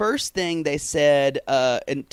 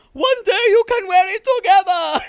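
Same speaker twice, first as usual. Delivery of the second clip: very high, loud, shrill squeal; 7 dB louder than usual. Retelling a talk about matching outfits, quoting Florian in a very high voice. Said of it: "in a very high voice".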